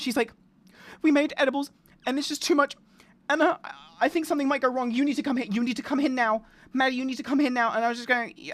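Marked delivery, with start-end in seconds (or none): 1.0-7.7 put-on frantic, freaked-out, panicked pleading tone. Retelling a friend's call after too-strong edibles, imitating someone panicking. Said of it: "she's fucking panicking".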